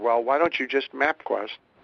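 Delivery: mock frustrated tone. Retelling what she said to you, imitating a very frustrated tone. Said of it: "in a very frustrated tone of voice".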